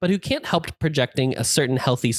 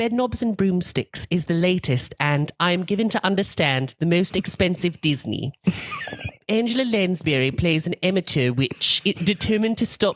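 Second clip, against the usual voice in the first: put-on British accent, pitched up, reading voice; 5 semitones higher than usual. Reading a film review aloud in a put-on british accent. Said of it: "I'm going to read it in a British accent".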